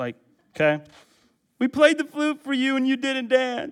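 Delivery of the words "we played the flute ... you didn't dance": put-on very high-pitched childish whining. Acting out what one child says to another, in a mock-whiny voice. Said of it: "sounded more whiny than that".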